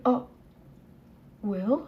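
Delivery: play-acted bewildered, puzzled tone, low and soft. Retelling a woman's reaction when the speaker's dad walks into the room: imitating a puzzled woman. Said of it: "All puzzled and confused".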